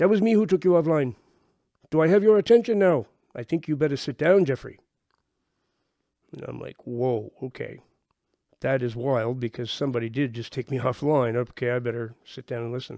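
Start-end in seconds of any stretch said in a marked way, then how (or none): 0.0-4.8 put-on woman's Indian accent, pitched high. Speaker retelling a phone call from a woman, in an indian accent. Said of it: "this person with an Indian accent, a woman".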